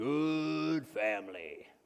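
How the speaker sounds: put-on deep baritone voice. Retelling what a science teacher always said on seeing the family, in a deep baritone. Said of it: "he would always say in this deep baritone voice".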